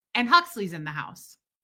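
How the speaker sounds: ordinary talk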